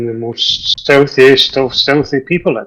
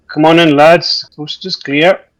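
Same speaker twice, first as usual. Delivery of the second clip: voice slightly raised; 3 semitones higher, 3 dB louder than usual. A player speaking as their character in a game scene, in a slightly raised voice. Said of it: "slightly raise my voice".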